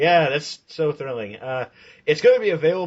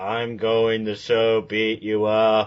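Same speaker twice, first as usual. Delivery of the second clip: wooden, flat, slow read-aloud delivery; 3 semitones lower than usual. Joining in mocking motion comic voice acting: imitating voice acting that sounds read. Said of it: "like they're reading".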